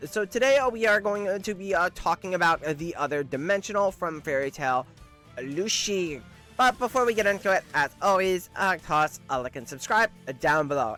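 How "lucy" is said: ordinary delivery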